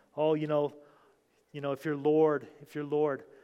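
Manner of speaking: plain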